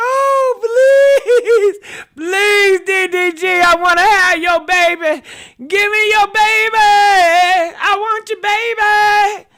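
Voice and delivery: high, loud fake sobbing, pleading, drawn-out "I". Acting out a woman they wonder was crying: mock-crying plea. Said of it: "Do y'all think that she was crying?".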